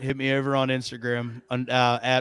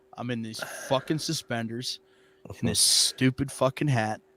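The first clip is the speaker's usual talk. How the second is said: put-on annoyed wrestler voice; 3 dB quieter than usual. Imitating a wrestler stuck in suspenders and a hat: imitating Pete Dunne, trying to be mad. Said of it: "trying to be mad, and he's like".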